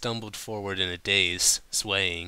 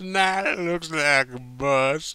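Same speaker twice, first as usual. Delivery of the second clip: put-on slurred with great effort, higher, louder; 8 semitones higher, 5 dB louder than usual. Narrating a woman who finally speaks, slurred with great effort. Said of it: "Applejack finally slurred with great effort".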